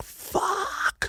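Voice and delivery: screaming at the top of the lungs, very high. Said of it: "I just screamed at the top of my lungs".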